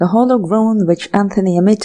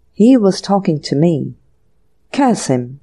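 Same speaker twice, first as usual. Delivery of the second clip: ordinary delivery, nothing marked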